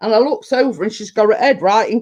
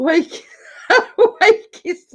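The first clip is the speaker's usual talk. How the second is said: high words breaking up with laughter; 7 semitones higher than usual. Trying to say a word, laughing while talking. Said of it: "I can't say it without laughing".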